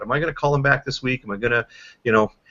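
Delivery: ordinary delivery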